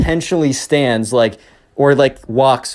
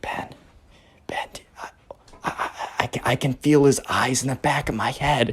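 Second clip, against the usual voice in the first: breathy, hushed whisper, stammering and tripping over words; 8 dB quieter than usual. Retelling a story where a camper whispers to a friend: imitating a whisper. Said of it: "Benjamin kinda whispers".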